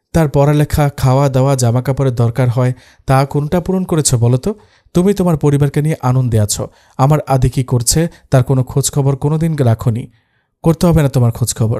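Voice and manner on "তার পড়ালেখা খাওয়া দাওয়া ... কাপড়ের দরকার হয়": ordinary delivery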